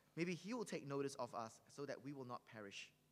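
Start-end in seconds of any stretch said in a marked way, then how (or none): none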